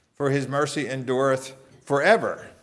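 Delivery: forever stressed, falling at the end. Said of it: "You could emphasize".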